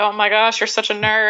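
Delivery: mock-exasperated, put-on weary tone. Retelling what her husband said to her, imitating an exasperated eye-roll. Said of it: "husband's just like rolling his eyes like".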